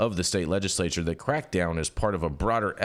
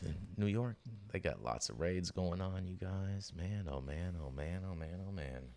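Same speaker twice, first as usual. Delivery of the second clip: soft, very quiet, barely audible half-whisper; 14 dB quieter than usual. Remarking to the others in the conversation, half-whispering. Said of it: "Sounds like you're whispering".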